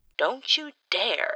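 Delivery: high, hissed, threatening delivery. Narrator reads Jesse protecting it from Fives' threat, hissing. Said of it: "he hisses".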